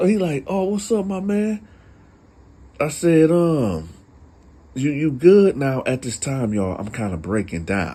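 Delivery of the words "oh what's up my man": mock very high voice, slightly shaky and nervous. Recounting how a homeboy greeted the speaker, imitating his shaky, nervous voice. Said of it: "he had this like kind of shakiness to him just a little bit, like a little nervousness".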